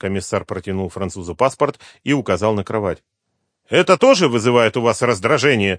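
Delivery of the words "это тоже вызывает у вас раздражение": pointed, provocative, defiant, challenging tone. Asked by the commissioner about the bed, the Frenchman retorts with a defiant question. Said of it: "с вызовом спросил месье Кристо".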